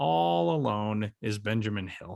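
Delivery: soft, sorrowful, lonely-sounding sad tone. Host introducing his co-host on the show, sad-sounding tone. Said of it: "sort of sad-sounding uh, enunciation tone of being all alone".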